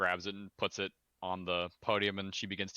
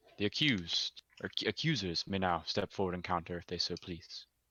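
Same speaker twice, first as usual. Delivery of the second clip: stern, commanding, formal judge voice. Presiding over a hearing in the town center, she addresses the room; commanding. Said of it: "She rises slowly, gracefully, commanding dominance over the room. / She rises slowly, gracefully, commanding dominance over the room. / She kind of cocks her head and says, / commanding dominance over".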